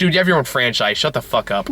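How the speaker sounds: usual speaking voice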